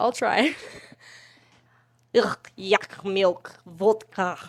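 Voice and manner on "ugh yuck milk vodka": put-on loud Russian accent, very drawn out. Speaker tries out an accent they say they can kind of do: russian accent. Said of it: "I can kind of do a Russian accent".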